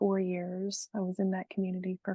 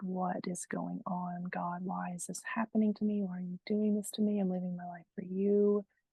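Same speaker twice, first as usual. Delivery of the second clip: acted-out sobbing, crying voice. Retelling a prayer on a grandma's porch: retelling a sobbing prayer. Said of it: "just sobbing".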